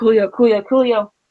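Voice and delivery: ordinary delivery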